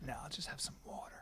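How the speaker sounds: hushed, soft whisper, full of pride. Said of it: "I go".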